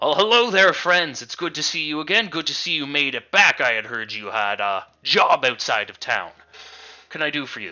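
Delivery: booming, loud, boisterous dwarf voice. The storyteller voices a dwarven man greeting the party as they walk over, loud, boisterous dwarf voice. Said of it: "He's loud, he's boisterous".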